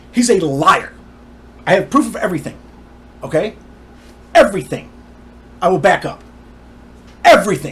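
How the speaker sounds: riled up, agitated, insistent tone. Speaker talking about a man who took the company, getting worked up. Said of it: "I'm sorry I get worked up".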